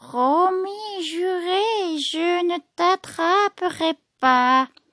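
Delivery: very soft sweet voice. Reading a tale aloud, the witch coaxing a boy down: very soft sweet voice. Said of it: "prend une voix toute douce et affirme".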